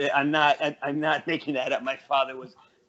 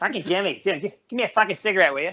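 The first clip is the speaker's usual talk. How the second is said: put-on nasal Boston accent; 5 semitones higher, 4 dB louder than usual. Imitating his grandmother from Southie talking to Jimmy: nasal Southie accent. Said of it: "Very nasally".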